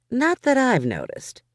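bone-dry quip delivered in a very high voice. The narrator replies to a man's question: dry. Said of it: "I said dryly".

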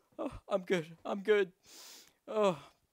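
crying through words. Speaker finally succeeds after three months of runs, crying. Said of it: "I'm literally fucking crying right now".

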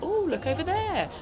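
high, chirpy, mocking clueless airhead chatter.

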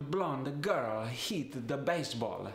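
put-on Italian accent, vowels added after consonants. Speaker gives an example sentence to show a pronunciation rule: Italian accent. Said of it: "Another thing I love about the Italian accent".

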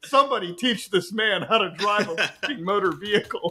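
put-on ranting, screaming voice. Retelling a dad reacting to a driving video: imitating dad screaming. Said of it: "my dad is literally screaming at the television".

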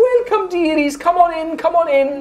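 very high, cheerful, bubbly hostess voice. Voicing a cheerful dwarven woman greeting guests: cheerful dwarf woman voice. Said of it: "and she looks over".

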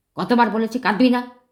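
angry voice. A narrator reads the brother-in-law scolding Binu for crying, angry voice. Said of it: "দুলাভাইয়ের ক্রুদ্ধ গলা".

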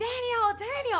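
very high, very loud, shrill scream. Recounting being tied to a rope and thrown in a river, retelling a scream. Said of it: "So I'm screaming".

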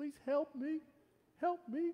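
tiny, squeaking voice, pitched very high. Reading a story aloud as a small apple, in its squeaky tiny apple voice. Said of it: "squeaked out in its little tiny apple voice".

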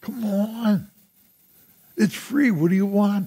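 high, excited, urging voice. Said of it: "I'm sorry I got all excited".

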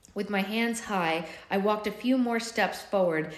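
usual speaking voice

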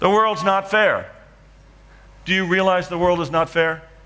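acted-out screaming. Telling a story of grabbing a sculpture at dawn, retelling a scream. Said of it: "I start screaming".

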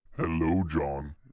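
eerie, ghostly, creepy, nightmarish cat voice. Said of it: "In that voice?".

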